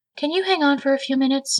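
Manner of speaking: very high voice with a trembling tremor. [name] answers her sister Jennifer at the table, trembling voice. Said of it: "a tremor in her normally chipper voice".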